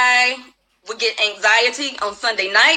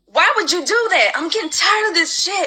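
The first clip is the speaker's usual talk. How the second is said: mock, high-pitched screaming tirade; 7 semitones higher than usual. Retelling how she was screamed at over requested days off, imitating a woman screaming. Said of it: "So she screamed at me".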